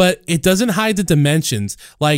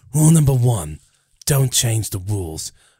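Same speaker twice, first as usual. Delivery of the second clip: put-on tough-guy, hard-man voice; 6 semitones lower than usual. Quoting rules about the package in a Jason Statham voice. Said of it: "Just do the normal Statham voice".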